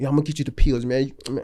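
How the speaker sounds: put-on old man voice, mumbling, mouth-twisting speech. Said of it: "he move his mouth real funny when he talk".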